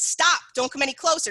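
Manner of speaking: loud, firm, assertive commanding tone. Demonstrating what to say to someone coming closer, a loud assertive warning. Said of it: "give them a second to pause".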